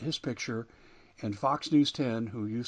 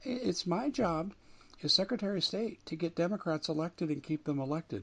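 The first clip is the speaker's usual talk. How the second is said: bad valley girl voice, pitched up; 6 semitones higher than usual. Speaker quotes what a woman said about her elected position, poor 90s Valley girl imitation. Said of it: "she talks like a 90s Valley girl, so pardon the poor imitation here".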